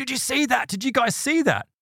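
sudden, high-pitched, excited cry.

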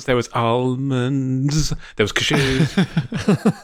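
very slow, careful drawing out of the nut names. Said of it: "I'll really slow down on that word".

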